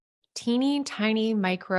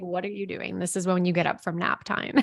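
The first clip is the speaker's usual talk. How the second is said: ordinary talk, nothing marked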